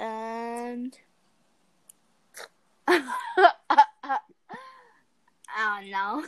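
words broken up by giggles. Answering a question about an older brother, laughing while talking. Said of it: "Here comes attack of the giggles again".

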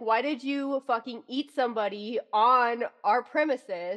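fed-up, exasperated, frustrated outburst with cursing. Retelling a show scene where Lestat scolds Louis: imitating Lestat's frustration. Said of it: "gets so frustrated with him".

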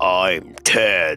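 put-on deepened voice. Retelling pretending to be older on the mic, answering in a deliberately deepened voice. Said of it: "I deepened my voice and I said".

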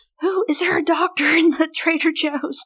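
frantic, high, panicked shout. Retelling a panicked mom in a Trader Joe's, imitating a scream. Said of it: "you're screaming through".

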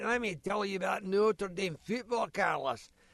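put-on speaking with a Scottish accent. Speaker recalls breakfasts at someone's house, imitating Uncle Danny's voice. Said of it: "with a voice like that".

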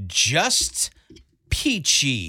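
slow, snotty tone, mocked. Retelling a woman's reply to a friendly greeting, imitating a slow, snotty tone. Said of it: "Kind of in that tone, like very slow".

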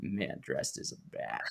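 barely voiced, breathy whisper under the breath. Imitating the villain reading the newspaper: Jack Nicholson Joker impression. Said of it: "he's a lot of fun to imitate, especially his Joker".

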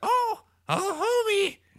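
very high, raspy cartoon voice. Discussing whose voice a woman sounds like, speaker does a raspy Marge Simpson voice. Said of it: "That's my dead on Marge impression".

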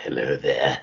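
very deep, dark voice kept soft. Recalling a month of lost voice to a co-host, in a deep dark Christopher Lambert voice. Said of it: "You sounded like very dark and deep".

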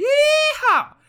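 very high, very loud whoop, voice peaking. Joking about post nine eleven America, voice peaking high. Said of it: "how much my voice peaked when I did that".

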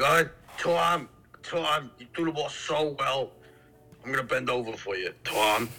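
put-on slow, thick, heavy Boston accent, sounding like a dude. Mocking how women from boston talk: imitating a thick boston accent. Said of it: "ugly women from Boston who have the thick accents. They sound like dudes".

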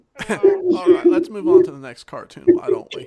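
belted very loud, very high, swooping sing-song delivery. Move the others on to the next cartoon, in a Clinton voice. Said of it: "Did you say that in his voice on purpose?".

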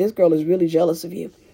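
normal talking voice

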